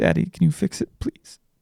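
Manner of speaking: acted, very high, tearful little-girl begging voice. A father retells his daughter asking him to fix a broken handle, imitating a teary child's plea. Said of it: "with tears in her eyes".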